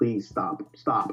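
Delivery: mock tearful, pleading, machine-like crying voice. Retelling how the overloaded machine begged to stop: mock crying, pleading machine. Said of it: "my machine was, like, crying".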